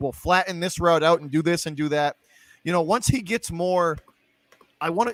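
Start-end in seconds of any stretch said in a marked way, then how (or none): none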